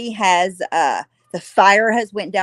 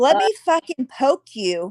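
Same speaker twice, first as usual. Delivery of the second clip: imitated manipulative tone, higher pitch; 6 semitones higher than usual. Pausing the video, imitating the woman as a gaslighter: imitating a gaslighter. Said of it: "She's like".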